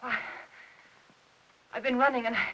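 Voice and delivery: out of breath, breathless. Asking Aunt Clara if she has been upstairs, out of breath. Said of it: "Why are you so out of breath?".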